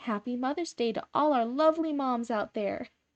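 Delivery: bright, upbeat, cheery, high pitch, unhurried pace. Recording a Mother's Day greeting in the tone someone asked for, cheery. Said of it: "hopefully that sounded a little bit cheery".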